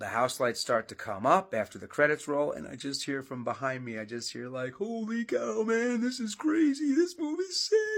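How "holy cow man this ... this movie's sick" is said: clumsy, squeaky-high, drawn-out voice. Retelling hearing an actor behind him in a theater: bad Matthew Lillard impression. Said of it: "of which I'm doing a bad job replicating here".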